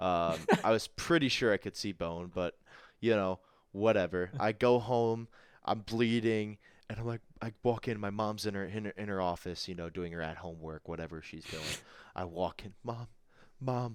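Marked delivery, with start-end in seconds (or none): 12.8-14.0 soft, mock tearful, crying voice. Retelling walking in bleeding to mom's office, imitating own crying. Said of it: "I'm crying".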